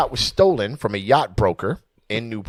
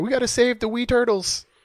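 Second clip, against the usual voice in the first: very high, put-on Irish cartoon-style accent; 12 semitones higher than usual. Imitating a cartoon character who wants to save turtles, Irish Simpsons character voice. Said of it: "the Irish character from, uh, come on, man, from The Simpsons".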